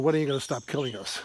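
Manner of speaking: ordinary delivery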